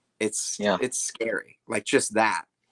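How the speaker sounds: plain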